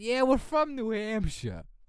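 put-on thick New York accent. Imitating a woman who claimed to be from New Hampshire, thick New York accent. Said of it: "the most New York accent ever".

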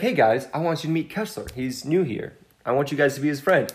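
plain

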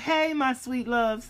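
very slow, high, loud, stretched-out delivery. Showing how she greets listeners: imitating how she said it. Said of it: "And that's how she said".

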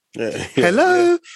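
speaky-spoky telephone voice. Imitating a mum answering the house phone, in her speaky, spoky voice. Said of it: "they put on that speaky, spoky voice".

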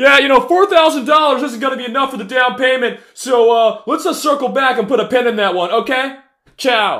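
very high, shrill, loud yelling. Mocking a person on a conference call in the street, mock yelling impression. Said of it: "Yelling like it's fucking Bedford Avenue".

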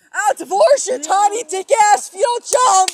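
voice cracking. Told what to say, the speaker dares someone to jump, voice cracking. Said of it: "Your voice cracked so much".

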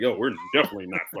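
put-on, dark, ominous, foreboding tone. Retelling a character's line from a show: imitating an ominous tone. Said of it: "she said that, like, ominously".

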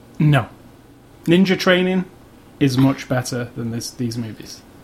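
sarcastic tone. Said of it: "And that was sarcasm".

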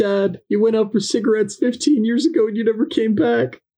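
very high, put-on, wounded child voice. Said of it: "Just like".

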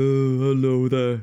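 loud, dim, dopey one-eyed monster voice. Showing the voice used playing a Cyclops in a kids' show: dopey Cyclops voice. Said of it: "a really dopey".

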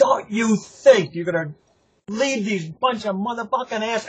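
shrill screaming. Retelling how she stood on the step and screamed: imitating her screaming. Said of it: "she screams at me".

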